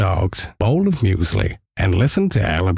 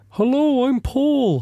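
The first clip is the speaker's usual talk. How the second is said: very high, pitched-up voice. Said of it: "I talk with a slightly high voice like this".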